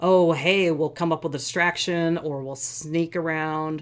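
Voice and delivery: ordinary talk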